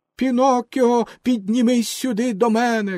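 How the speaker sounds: loud shouting, yelling. Orlikin, among the puppets who ran onto the stage, shouts to Pinocchio. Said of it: "кричав Орликін".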